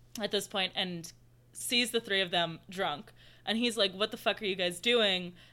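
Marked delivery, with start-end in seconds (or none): none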